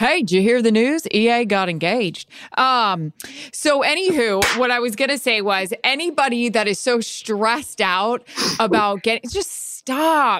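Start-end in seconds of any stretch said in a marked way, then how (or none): 0.0-2.3 put-on announcer voice with put-on accent, faster. Asked what Troy would say about your engagement, reply with a Troy impression with put-on accent. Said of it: "What would Troy say about your engagement?".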